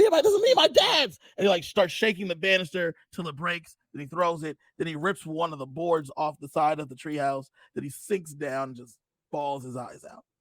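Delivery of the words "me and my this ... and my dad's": high, loud yell. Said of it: "he yells".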